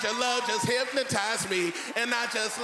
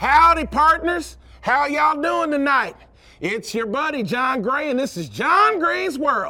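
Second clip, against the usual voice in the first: loud put-on Texas twang; 3 semitones higher, 9 dB louder than usual. Speaker opens his show in Houston for the audience, in a Texas twang. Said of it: "I had to give you a little bit of Texas twang".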